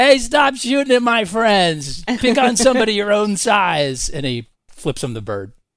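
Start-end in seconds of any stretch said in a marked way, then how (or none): 0.0-4.1 put-on very high, loud, drunken hollering. Voicing a very drunk character yelling at attackers: drunken yelling. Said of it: "he staggers to the front and he yells".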